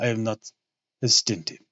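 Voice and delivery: put-on voice, strained and grating in the throat. Reading a passage aloud, voicing the character's lines in a Dracula voice. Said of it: "that Drac voice is grating at my vocal cords here".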